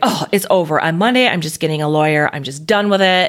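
usual speaking voice

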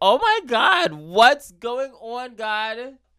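booming, very high, very slow, drawn-out shout. Retelling own past words with "I was like": imitating a loud shout. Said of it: "you're too fucking loud".

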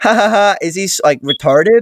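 high, snide, mocking ha-ha laugh. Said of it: "she goes".

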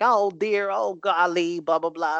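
put-on old-timey Southern accent. Describing a woman's in-ring character, he mimics her: silly old-timey Southern hick voice. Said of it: "real Southern hick type voice".

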